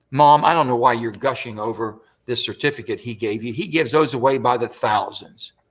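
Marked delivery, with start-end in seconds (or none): none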